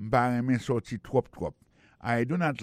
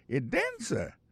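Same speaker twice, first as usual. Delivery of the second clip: astonished, surprised tone; 8 semitones higher, 3 dB quieter than usual. English lesson dialogue replying to 'i am a dancer', surprised tone. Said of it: "il prononce avec un ton surprise".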